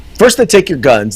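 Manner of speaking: usual speaking voice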